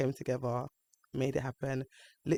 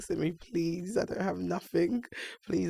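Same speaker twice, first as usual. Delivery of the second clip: acted, high, tearful crying and pleading; 5 semitones higher than usual. Retelling a client's panicked call before her wedding: imitating someone crying and pleading. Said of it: "And she's just crying".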